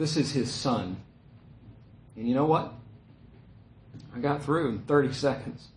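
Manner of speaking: soft, moved, emotional voice. Recalling getting a phone call through to a busy relative, speaker sounds emotional. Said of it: "I'm emotional about that".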